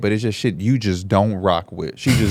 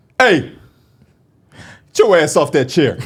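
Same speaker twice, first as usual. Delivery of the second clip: loud, raised, stern scolding dad voice; 7 semitones higher, 5 dB louder than usual. Speaker shows how he has to talk once he's in dad mode, dad mode. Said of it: "got to be in dad mode".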